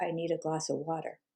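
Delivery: mock hushed, very quiet, toneless monotone. Retelling what the dad said when found standing upstairs: retelling a flat monotone. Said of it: "Just very monotone".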